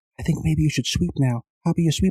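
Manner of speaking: meek, timid, hesitant, tentative tone. Explaining why you must yell in curling, imitating someone talking really quiet. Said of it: "people are talking really quiet".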